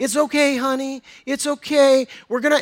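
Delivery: sweet, soothing voice. Speaker retelling a nurse holding a kid down, imitating her sweet voice. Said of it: "is speaking sweetly to him".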